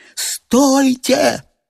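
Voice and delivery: abrupt, sudden shout, very high and raspy. A man suddenly cries out to the others: sudden shout. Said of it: "вдруг закричал Леонид Сергеевич".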